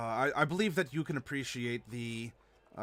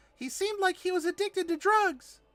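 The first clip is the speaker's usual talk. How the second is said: light, very high-pitched, raised voice; 7 dB louder than usual. Trying to break hard news to someone lightly, in a high-pitched voice. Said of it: "say it in a high pitched voice".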